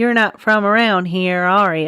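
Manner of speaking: put-on small-town working man voice. Podcast host imagines a gas attendant in a cursed-looking town, put-on gas attendant voice. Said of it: "I don't know why I use that voice".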